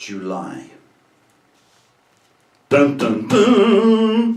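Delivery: very high, loud, swooping, dramatic, long drawn-out "duns". A speaker reveals an answer to listeners, as a dramatic reveal. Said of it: "That was for dramatic effect".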